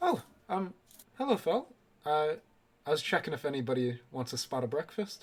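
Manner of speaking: courteous, polite, hesitant, halting voice. Game master voices the inn's barkeep knocking on the players' doors, inn barkeep character voice. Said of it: "Uh, the barkeep will look down and go, / Uh, the barkeep will look down and go".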